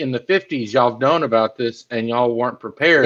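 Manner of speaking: usual speaking voice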